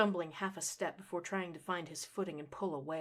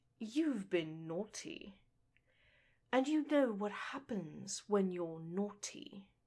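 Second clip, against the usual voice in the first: rich, sensuous voice lingering on each word, venomous; 3 semitones higher than usual. A narrator reads a woman teasing a man: sensuous, poison-dripping tease. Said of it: "Her tone was sensuous, but dripped with poison".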